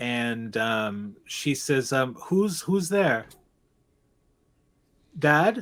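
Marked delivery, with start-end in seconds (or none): 2.1-5.6 wobbly, shaky, quavering, wavering voice. Narrating a girl who hears someone on the stairs: imitating a shaky voice. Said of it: "It's a bit shaky".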